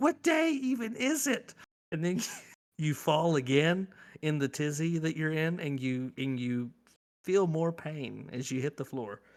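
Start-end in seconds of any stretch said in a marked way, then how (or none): 0.0-1.5 acted, baffled, very high-pitched wondering tone. Describing hunting for a lost wallet on a Saturday, act out being confused. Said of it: "you're confused because you're like".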